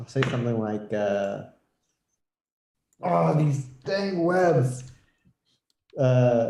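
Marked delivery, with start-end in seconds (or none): 3.0-4.8 high shouting in a character voice. Voicing a character in a game who yells at the webs: in-character yell. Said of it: "I'm gonna yell out".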